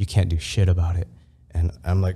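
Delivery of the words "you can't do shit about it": put-on ghostly, menacing whisper, lower pitch. Retelling a dream where a ghost figure chokes him: imitating a ghost whispering. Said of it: "it starts whispering".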